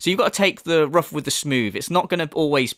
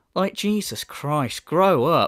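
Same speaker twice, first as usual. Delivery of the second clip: ordinary talk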